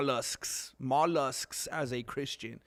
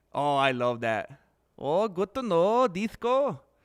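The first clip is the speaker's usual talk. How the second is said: Irish accent creeping in; 4 semitones higher than usual. Chatting with Jessica and Disco, slipping into an accidentally Irish-sounding accent. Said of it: "I definitely absorbed that accent".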